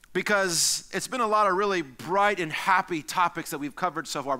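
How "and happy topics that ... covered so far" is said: ordinary talk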